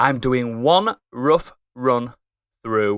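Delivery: slow, deliberate, careful reading. Host introducing a co-host and reading out his editing mantra; reading slowly. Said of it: "read that slowly".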